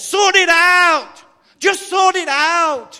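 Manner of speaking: very loud, very high, very slow, drawn-out yell. Telling an illustration to an audience about a man upstairs, imitating a man shouting downstairs. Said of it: "and he shouts downstairs".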